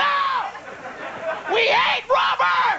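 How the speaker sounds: slow, high-pitched group shout.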